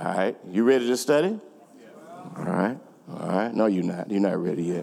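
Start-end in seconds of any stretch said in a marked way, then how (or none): 3.5-4.8 very low, quick, playful teasing tone. Preparing the audience to study, the speaker teases them: teasing. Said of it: "I'm just teasing you".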